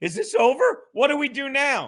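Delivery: frightened, panicky, terrified voice with swooping pitch. Retelling how someone else reacts: imitating someone terrified. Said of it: "and you're terrified, like".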